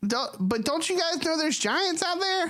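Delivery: very high-pitched, tiny pixie voice.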